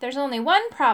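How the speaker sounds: ordinary delivery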